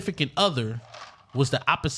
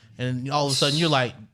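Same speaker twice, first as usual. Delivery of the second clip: ordinary talk, nothing marked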